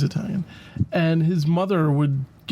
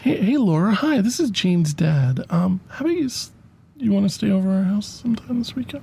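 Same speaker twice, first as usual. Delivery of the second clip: put-on creepy voice, higher; 3 semitones higher than usual. Acting out a friend's father phoning to invite a girl over: imitating a creepy dad on the phone. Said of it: "It would sound like this".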